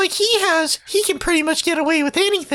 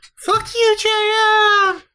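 distant, far-off, jeering, mocking voice; 4 semitones higher than usual. Narrating a man crumpling to his knees: far-off mocking voice. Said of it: "a far off mocking voice say".

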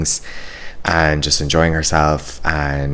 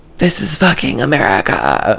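put-on high, swooping shrieked scream in a British accent; 8 semitones higher, 4 dB louder than usual. Retelling the best part, when a woman screamed out, retelling a scream in British accent. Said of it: "she screams out".

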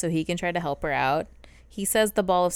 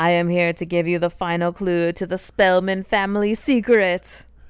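imitated very dramatic delivery, louder; 5 dB louder than usual. Retelling how a fire goddess character introduces herself: imitating a very dramatic character. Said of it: "very dramatic".

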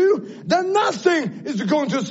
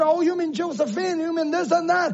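ordinary talk, nothing marked

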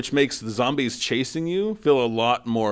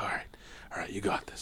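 put-on trembling whisper, shaky and rushed, building up; 4 semitones lower, 14 dB quieter than usual. Retelling a scene where Leon walks a dark hallway: imitating Leon's shaking voice. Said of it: "his voice is kinda shaking".

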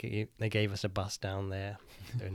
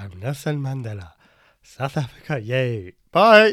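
very loud belted voice with big swooping pitch; 4 semitones higher, 15 dB louder than usual. Speaker has a surprise guest pop in, doing a Nelson Mandela impression. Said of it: "that was me saying bye to Nelson".

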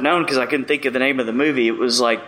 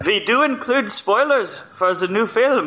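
terrible fake Norwegian accent, pitched up; 9 semitones higher than usual. Urged to do the whole show that way, a speaker keeps a bad Norwegian accent.

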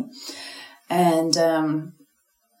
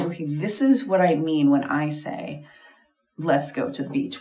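plain

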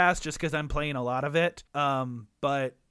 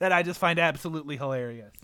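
ordinary talk

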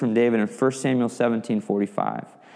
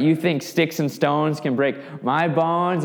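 scornful, jeering, mocking, taunting tone; 4 semitones higher than usual. Retelling the battle, voicing the giant's taunt: acting out Goliath's trash talk. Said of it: "the trash talk begins".

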